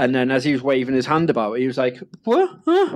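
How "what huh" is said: put-on very high, dismayed, baffled little kid crying. Retelling a child opening a toy without its lightsaber: imitating an upset, confused child. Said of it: "physically looked upset".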